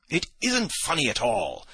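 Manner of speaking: annoyed outcry. The narrator answers a sniggering companion, crying out, irritated. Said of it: "I cried to Ferfitchkin, more and more irritated".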